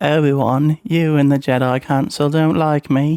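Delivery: put-on slipping into a somewhat British accent. Recreating a scene for listeners at home, the speaker voices Anakin with a British-ish accent. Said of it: "I slipped into like a British-ish".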